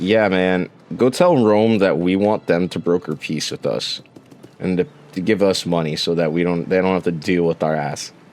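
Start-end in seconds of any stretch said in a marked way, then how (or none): none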